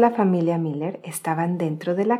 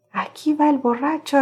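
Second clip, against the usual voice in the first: exclaiming, calling out, much higher pitch; 8 semitones higher, 3 dB louder than usual. Staggering through the room after laughing, he calls out, exclaiming. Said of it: "exclamó Timoteo".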